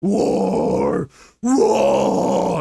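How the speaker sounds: gruff, rough, creaky orc growl. Right after planning the next reading parts, shouting in an orc voice. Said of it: "it's the orc voice".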